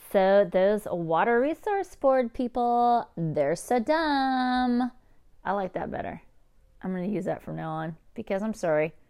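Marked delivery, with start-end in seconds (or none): 0.1-4.9 put-on very slow, dumb-sounding, stretched Valley Girl drawl. Speaker discussing thick accents, trying out a valley girl impersonation. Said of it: "I'll do my best Valley Girl impersonation".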